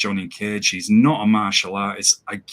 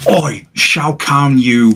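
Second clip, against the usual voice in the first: mocking put-on Cockney, high, very slow, drawn out; 5 semitones higher, 8 dB louder than usual. Mocking the film's Cockney Cage: Cockney Johnny Cage impression. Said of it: "waiting for him to go".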